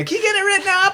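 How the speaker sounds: mock, very high, screaming voice. Retelling how buyers act on calls: imitating buyers screaming. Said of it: "screaming at me".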